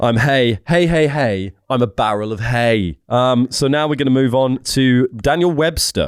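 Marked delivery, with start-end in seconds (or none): 0.0-3.0 contented, upbeat, happy talking hay bale voice. Asked for an impression of hay as it should be: impression of happy hay. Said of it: "Now do an impression of what hay should be".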